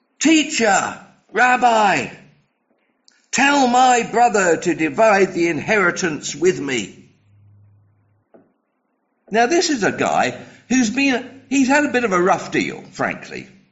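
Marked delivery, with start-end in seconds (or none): 0.2-7.1 mock bellowing shout. Retelling a Gospel story, the speaker acts out a man in a crowd retelling a bellowed shout to the teacher. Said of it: "And he bellows out".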